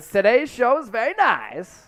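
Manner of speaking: swooping, sing-song character voice, pitch swinging up and down. Signing off the show together in a Borat voice. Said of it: "We're doing the Borat voices".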